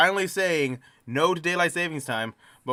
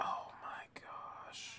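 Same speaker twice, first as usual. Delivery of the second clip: very quiet, hushed, breathy, disappointed murmur and sigh. Reacting to hearing how long something took to pass: disappointed. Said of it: "I can hear the disappointment".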